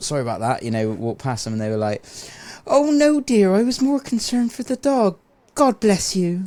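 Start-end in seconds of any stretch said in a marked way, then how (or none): 2.7-6.5 put-on very high, sweet old lady voice. Retelling what an old woman said after the dog ran past: grandma accent. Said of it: "You did a great grandma accent".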